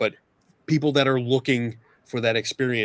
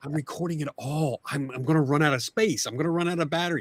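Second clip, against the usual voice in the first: annoyed complaining tone, higher and quieter; 4 semitones higher, 4 dB quieter than usual. Retelling a friend's complaint at a lighthouse, imitating an annoyed friend. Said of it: "Dawson was actually getting annoyed at me".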